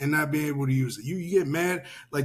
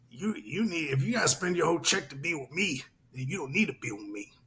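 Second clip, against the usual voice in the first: put-on dismissive female voice; 4 dB quieter than usual. Quoting a woman who was talking trash: imitating a woman talking shit. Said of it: "She was like".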